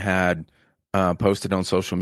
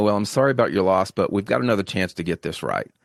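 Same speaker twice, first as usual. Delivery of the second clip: harsh, hard, sarcastic tone. Retelling a doctor's remark to a woman whose son died: imitating a hard, sarcastic tone. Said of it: "just hard and sarcastic".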